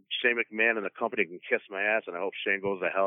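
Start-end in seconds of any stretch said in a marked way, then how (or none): none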